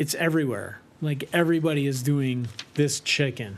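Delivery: ordinary delivery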